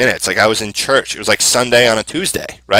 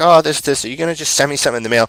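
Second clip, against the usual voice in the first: mock irritable, prickly, testy, short-tempered tone; 3 semitones higher than usual. Retelling a phone call with a client: imitating a testy client. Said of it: "she was really, like, testy".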